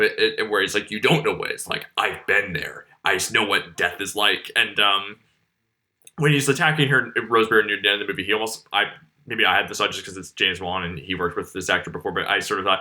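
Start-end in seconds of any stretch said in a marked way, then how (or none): 0.9-4.5 deep evil voice, dropped way down low. Quoting an actor's line from a film: imitating Patrick Wilson's voice dropped low. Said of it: "his voice is dropped, like, sort of, like, a couple of octaves".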